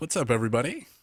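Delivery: on-air radio announcer voice. Prompted by another speaker, greeting everybody in his radio voice. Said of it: "this is my radio voice".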